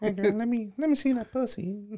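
very high, light, flirtatious voice. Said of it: "seduced by [name] with that light voice".

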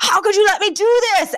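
acted, very high-pitched, enraged yelling outburst. Retelling a TV episode scene where a character yells: imitating a yell of rage. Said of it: "yells in rage and goes".

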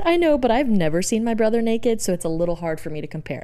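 ordinary talk

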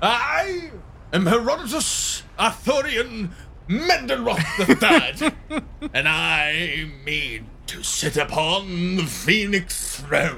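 slow, lofty oratorical pronouncement, drawn-out I. A character strikes a pose and introduces himself: grand orator's delivery. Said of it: "strikes his orator's pose and goes".

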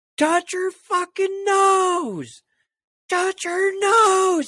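mock shrill yell, very high, loud, drawn out. Retelling being pinned against a fence: imitating someone yelling. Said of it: "I hear my uncle yelling at me".

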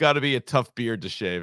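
put-on very calm delivery. Retelling what the person with them said while walking away, imitating a very calm remark. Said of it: "all he said was very calmly".

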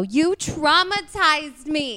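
put-on Jersey accent. Describing a joke bit and delivering its line, Sammy Sweetheart Jersey accent. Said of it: "That sounds Jersey".

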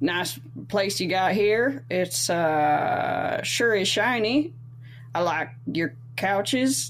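put-on cowboy character voice. Going in first during a character-voice game, in a cowboy character voice. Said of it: "We're doing our character voices?".

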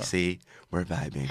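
very deep, very soft, hushed radio host voice. Imitating how another speaker just said a line, Delilah's Den voice. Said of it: "she's in her Delilah's Den voice".

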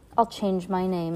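ordinary delivery, nothing marked

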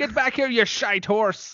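bad put-on Irish accent. Acting out a woman cursing at a horse, in a dodgy Irish accent. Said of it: "her Irish accent is a little dodgy".

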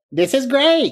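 very high, squeaky movie-director voice. Asked by a host to do it again, a guest repeats his film director impression. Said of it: "Do that again".

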